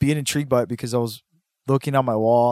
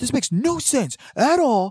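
put-on very high, slow, drawn-out angry rant; 13 semitones higher than usual. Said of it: "He got so mad over it".

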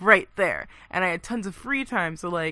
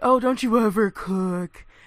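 put-on sneering voice, louder; 3 semitones higher, 4 dB louder than usual. Retelling what a coworker says about frozen lunches, imitating a sneer. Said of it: "she always sneers at my frozen enchiladas".

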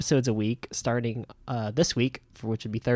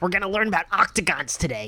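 put-on excited dude voice, higher; 7 semitones higher than usual. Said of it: "you're really good at impressions".

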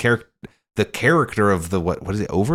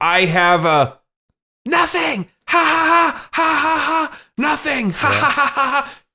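mock very high, stretched-out, drawn-out screaming laugh. Retelling a movie scene where a character throws open an office door: imitating a character screaming. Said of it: "just screamed at them".

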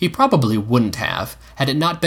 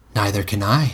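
plain

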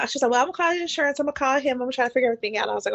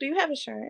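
acted, mock super-calm voice, quieter; 7 dB quieter than usual. Retelling a confrontation with an upset man, acting out being super calm. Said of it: "I'm like super calm".

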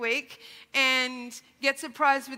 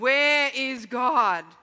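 even sterner, raised tone; 5 dB louder than usual. A clergyman repeats his question to a silent boy, in an even sterner tone. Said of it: "in an even sterner tone".

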